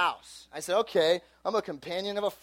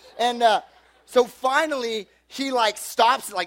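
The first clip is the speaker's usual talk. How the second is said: ordinary talk, nothing marked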